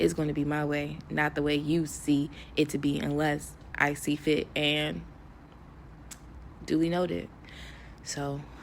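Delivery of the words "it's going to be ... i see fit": normal talking voice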